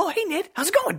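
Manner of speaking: put-on defensive, shrill, very high, very loud American accent. Mocking an actor's American accent, acting defensive: Tom Holland's defensive American accent. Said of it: "always trying to defend himself".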